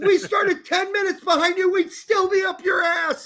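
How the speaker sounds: high-pitched shouting voice.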